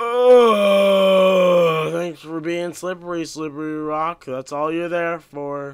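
furious, very loud, angry sarcastic yell. A player fed up with the game snapping at a slippery rock, angrily sarcastic. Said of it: "I'm angry".

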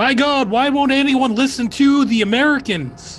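very high, exasperated, frustrated yell. In a role-play game, a frustrated character yells out: frustrated yell. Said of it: "he's gonna yell out".

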